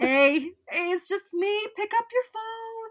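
put-on very high, loud, tipsy drunk voice. As a drunk bird calling someone at 2 a.m., drunk voice. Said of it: "a drunk calling bird at 2 a.m".

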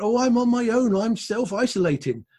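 put-on Somerset-accented speech. Retelling a phone call, quoting the woman who answered, in a strong Somerset accent. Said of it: "a very strong Somerset accent".

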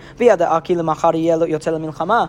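normal talking voice

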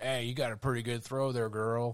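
mock rural carnival barker. Retelling a story, playing the carny dude talking to a girl: redneck carny voice. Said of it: "some redneck carny dude there who's like".

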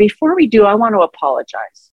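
ordinary talk

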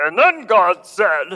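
slow pulpit preacher voice, stained-glass tone. Describing pastors stepping into the pulpit, the speaker mimics a stained-glass pastor voice. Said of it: "the stained glass voice of the pastor".

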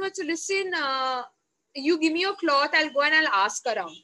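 ordinary talk

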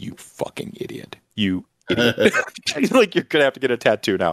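furious, super mad scolding. Retell how Molly, after watching that first hour, reacted to you, imitating Molly super mad. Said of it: "and just like super mad at me".

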